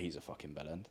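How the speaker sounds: mock muttering under breath. Retelling what a trainer said to his client: imitating muttering under breath. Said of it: "under his breath to his client".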